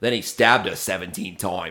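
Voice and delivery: put-on Australian accent. Recalling listening to someone just for the accent, imitating an Australian accent. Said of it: "someone with an Australian accent be like".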